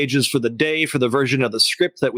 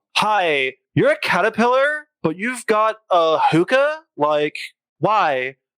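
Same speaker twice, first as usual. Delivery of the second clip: put-on Valley Girl accent, drawn out, high, swooping; 6 semitones higher than usual. Playing a part in Alice in Wonderland, in a Valley Girl accent. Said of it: "he says this part in a Valley Girl accent".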